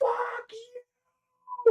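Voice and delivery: enraged, raging shout. Playing a character charging in with a long sword: enraged shout. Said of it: "And I go into a rage".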